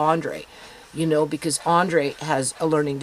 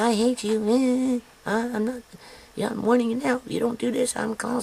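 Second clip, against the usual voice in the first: put-on high angry screaming, "you" stretched; 8 semitones higher than usual. A mom recounts a fight with her kid, retelling her screaming. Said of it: "she's screaming at me".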